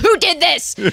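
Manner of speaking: mock, demanding shrill yell, very high-pitched. Retelling holding the egg up to each chicken: retelling a yell. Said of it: "I did hold it up to each of them and yell".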